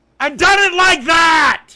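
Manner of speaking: furious, emotional, high, drawn-out angry yell. Arguing with another speaker about how to cook biscuits: angry shouting. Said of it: "He's so mad".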